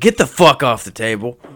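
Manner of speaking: play-acted, very loud, menacing, threatening shout. Retelling telling someone to get off the table, retelling a threatening tone. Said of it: "if I'd overheard somebody saying what I said in that tone, it would seem threatening".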